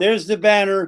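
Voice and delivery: normal talking voice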